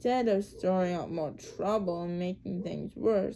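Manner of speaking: ordinary delivery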